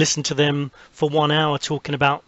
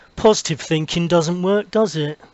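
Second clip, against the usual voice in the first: doubting, negative, pessimistic tone; 3 semitones higher than usual. Showing how a street survey question could be asked: negative tone. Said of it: "in a very negative way".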